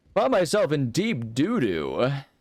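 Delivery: high, swooping baseball play-by-play announcer voice. Playing a game and repeating his own line in a baseball announcer voice. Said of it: "I've got my baseball announcer voice stuck".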